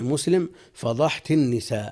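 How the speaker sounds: plain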